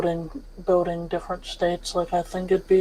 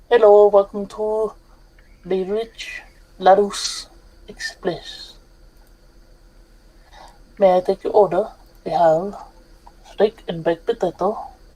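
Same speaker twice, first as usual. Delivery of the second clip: put-on French waiter accent. Pretending to be a train waiter taking an order, in a french accent. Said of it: "It's your French accent".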